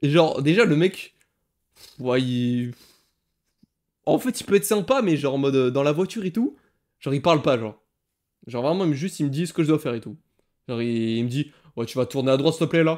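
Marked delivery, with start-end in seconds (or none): 11.8-13.0 play-acted, menacing, threatening tone. Retelling a driving instructor's order to turn right: imitating a menacing tone. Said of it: "il a un ton menaçant".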